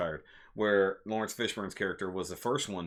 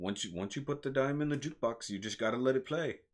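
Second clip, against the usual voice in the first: terrible put-on Russian accent, pitched up; 5 semitones higher than usual. Recounting a russian character's movie line, in a terrible russian accent. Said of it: "And that was a terrible accent".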